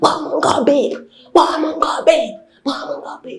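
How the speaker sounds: mock shouting. Describing someone's mother shouting, imitating a mother shouting. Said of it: "She's just busy shouting".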